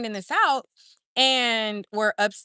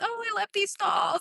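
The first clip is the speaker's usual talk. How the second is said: put-on very high, babyish cooing talk; 11 semitones higher, 4 dB quieter than usual. Retelling what a witness said on the stand, imitating Blanche Consorti talking like a baby. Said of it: "she talks like a baby".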